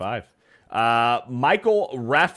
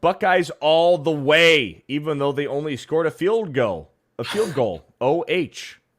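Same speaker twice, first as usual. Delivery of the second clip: normal talking voice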